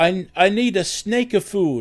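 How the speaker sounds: put-on thick Italian accent. Retelling a guy who came into a suburban store, heavy accent, maybe Italian. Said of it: "he had a really heavy, heavy accent, maybe Italian".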